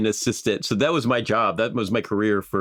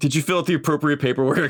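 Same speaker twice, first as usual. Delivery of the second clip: very professional businesslike tone, much higher; 6 semitones higher than usual. Asking the other person a question: very professional tone. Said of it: "you used a very professional tone of voice".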